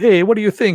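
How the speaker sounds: put-on stock Italian accent, loud. Describing a dubbed character, imitating him in a stereotyped Italian accent. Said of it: "you know stereotyped Italian accent kind of thing".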